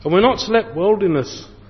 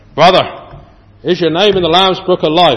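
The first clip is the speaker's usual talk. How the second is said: bad, weak, put-on Northern Irish accent; 9 dB louder than usual. Quoting what some Christians ask a preacher on meeting, poor Northern Irish accent. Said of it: "That's a Northern Irish accent I'm attending there very poorly".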